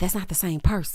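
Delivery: whispered under the breath, as an aside. Retelling what Nick whispered to Preston: imitating Nick whispering. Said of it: "whispering it to Preston".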